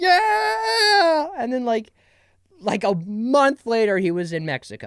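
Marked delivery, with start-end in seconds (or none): 0.0-1.3 very high loud ecstatic crying fan scream. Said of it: "And I was like".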